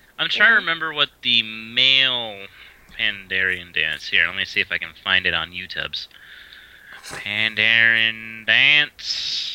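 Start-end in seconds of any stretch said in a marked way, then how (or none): 7.0-9.5 put-on, drawled Southern American accent. Searching YouTube with a friend, the speaker says the search term in a southern drawl. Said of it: "you went southern drawl there".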